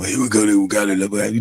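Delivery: voice with a raspy, rough edge. Trying out the Rizzy impersonation a viewer asked for: raspy Rizzy impression. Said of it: "I know he's raspy".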